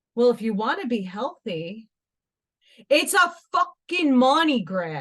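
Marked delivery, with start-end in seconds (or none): 2.9-5.0 loud New York accent, laid on thick. Ranting about overpriced salts, strongest possible New York accent. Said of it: "in my most New York accent you could possibly get".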